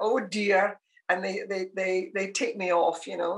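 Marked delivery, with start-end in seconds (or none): 0.0-0.8 put-on broad Glasgow Scottish accent. Speaker retelling how family members mimic them, put-on full glasgow accent. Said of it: "this this full Glasgow accent".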